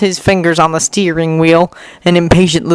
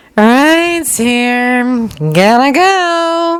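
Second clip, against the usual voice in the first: lilting, musical, sing-song call-out; 7 semitones higher than usual. Reading a story aloud, a girl calling to a friend: sing-song voice. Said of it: "she calls with a sing-song voice".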